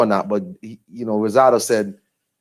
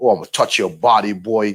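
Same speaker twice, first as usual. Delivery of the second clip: put-on New York boxer accent. Recounting the trash talk before a fight, in Danny Jacobs's New York accent. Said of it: "in his, you know, New York accent".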